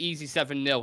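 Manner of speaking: ordinary delivery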